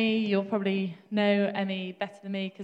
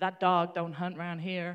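put-on Alabama Southern US accent; 3 semitones lower than usual. Quoting a mum from alabama scolding her kids: imitating an alabama accent. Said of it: "Alabama, such a great accent".

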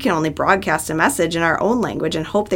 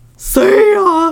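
goofy, very high, loud whale voice; 13 semitones higher, 6 dB louder than usual. Imagining whales leaving for the moon, the speaker says goodbye in a silly whale voice. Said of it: "I think that's what they would sound like".

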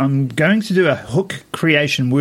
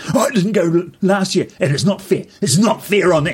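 put-on ranting man's voice; 4 semitones higher than usual. Speaker recounts a stranger going to see the Chiefs, imitating a ranting man. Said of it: "And then he started ranting".

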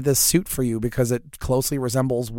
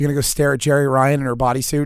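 ordinary talk

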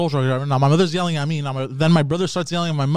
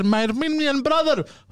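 high, laughing, fervent calling voice. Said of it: "and she goes".

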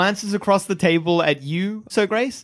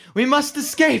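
gasping for air, much higher pitch; 9 semitones higher than usual. A man freed from tentacles speaks to his rescuers: gasping like drowning. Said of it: "he gasps like he's been underwater".

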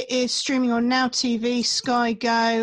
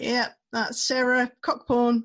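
normal talking voice

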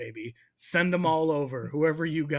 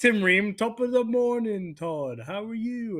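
fake British accent, pitched higher; 6 semitones higher, 3 dB louder than usual. Imagining an American player faking a British accent so he won't be signed, Tim Ream's fake British accent. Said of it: "putting on fake British accents".

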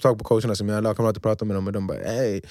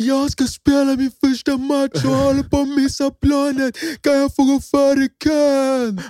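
acted-out yelling, much higher, louder; 7 dB louder than usual. Retelling rushing through the airport to catch a flight, retelling a shout. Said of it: "Och du skrek".

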